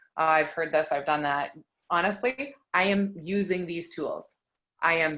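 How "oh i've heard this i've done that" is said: usual speaking voice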